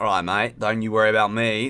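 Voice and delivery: put-on Australian accent. Self-prompted to put on an accent, australian accent. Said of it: "Do an Australian accent".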